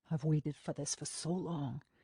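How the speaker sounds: low, husky, close delivery. Reading a romance scene aloud, a lover speaking: husky voice. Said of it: "he says in a husky voice".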